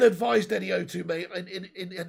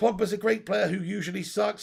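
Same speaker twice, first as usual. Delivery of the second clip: usual speaking voice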